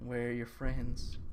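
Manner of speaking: soft, eerie, unsettling creepy voice. Retelling a woman at the door on Halloween night, creepy voice. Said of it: "Kind of like in a creepy voice like that".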